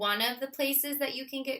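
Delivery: plain reading voice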